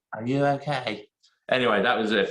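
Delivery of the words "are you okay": put-on woman's voice, pitched higher. Doing an impression of what Holly once said: Holly impression. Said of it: "this is my impression of Holly when she said".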